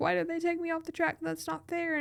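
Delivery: crying, upset, tearful, high-pitched voice. Retelling being taken off the track in the pits: imitating own past crying. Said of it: "I get in the pits and I'm crying".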